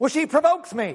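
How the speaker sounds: fake Southern American twang. Quoting a man who excused hitting his wife, imitating a southern twang. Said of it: "in that southern twang".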